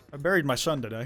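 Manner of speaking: mock somber, solemn voice. Speaker demos a voice-chat line a friend suggested, in a mock somber voice. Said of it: "most somber voice you can".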